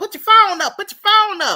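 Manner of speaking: shrill, very high, loud scream. Retelling screaming at kids at school: imitating own screaming. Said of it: "I'm up here screaming at kids saying".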